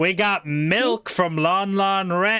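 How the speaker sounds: showy, grand, loud, slow, high-pitched proclaiming voice. Voicing a bartender offering a drink to a player: said loudly in character. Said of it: "very auspiciously says this loudly".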